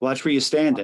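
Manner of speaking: ordinary talk, nothing marked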